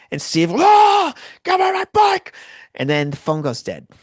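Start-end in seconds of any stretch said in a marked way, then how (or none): 0.5-2.3 shrill, very high, very loud, stretched-out scream. Retelling a friend fighting over a bike on the phone: imitating someone screaming. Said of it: "scuffling and screaming".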